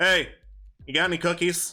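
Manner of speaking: amplified, reverberating, echoing voice over a microphone. A game master voices a reply coming up the salt mine, echoing over a microphone. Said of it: "an echoing voice as if from a microphone".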